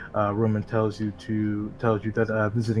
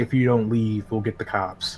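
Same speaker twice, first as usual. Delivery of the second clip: ordinary talk, nothing marked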